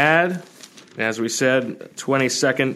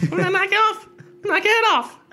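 squeaky, very high-pitched voice. Joking about a drafted player who shares a name, high-pitched Mike Tyson voice. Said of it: "I only went high pitched".

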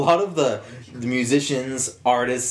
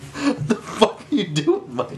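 high, slow, drawn-out, exasperated and indignant outburst. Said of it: "That's my Brendan impression".

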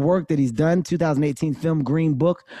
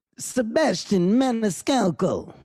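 high, bad put-on Italian accent; 5 semitones higher than usual. A host introduces his guest by name in an Italian accent. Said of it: "That was my Italian accent".

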